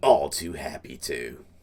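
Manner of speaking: put-on low, slow, deep, rough tough old woman voice. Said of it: "like, the deep voice".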